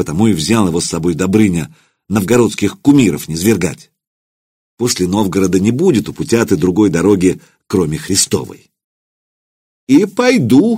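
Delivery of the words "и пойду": very high, ringing exclamation. Reading the bishop's reply about going himself; exclaimed. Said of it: "воскликнул епископ".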